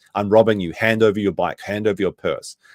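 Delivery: ordinary talk, nothing marked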